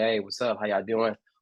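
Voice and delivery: low deep straight-guy voice. Showing how he code-switches, low deep straight-guy voice. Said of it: "put on my very like very straight straight voice, kind of get like low, deep my voice".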